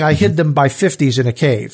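usual speaking voice

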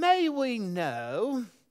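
haughty, high, scholarly British, "know" drawn out. Speaker voicing the Areopagus crowd questioning a preacher, in a put-on haughty scholarly tone. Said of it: "that real haughty, you know, um, scholarly tone".

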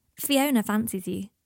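ordinary delivery

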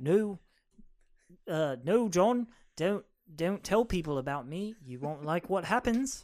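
poorly attempted Liverpool accent. Quoting a warning said to John, in a bad Liverpool accent. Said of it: "Let me try and do the Liverpool".

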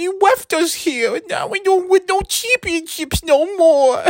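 whiny, mocking fan voice.

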